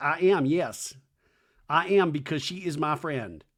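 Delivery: ordinary delivery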